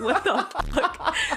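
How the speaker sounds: mock amused, high chuckling through the words. Retelling finance bro's reaction at the table, imitating someone chuckling. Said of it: "chuckling, like".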